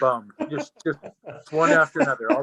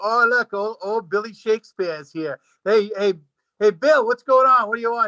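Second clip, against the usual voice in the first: put-on Boston accent, pitched up; 8 semitones higher, 3 dB louder than usual. Speaker acts out buddies greeting Shakespeare over a beer, Boston accent. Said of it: "Shakespeare was done in like you know a Boston accent".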